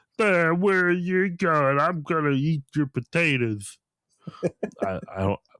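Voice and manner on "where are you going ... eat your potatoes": high, slow, dopey, goofy cartoon henchman voice. Saying he can only do silly voices, the speaker shows one: silly henchman voice. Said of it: "you sound like Petey the Puma from Looney Tunes".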